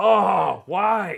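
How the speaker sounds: loud, angry yelling. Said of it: "Sorry I yelled".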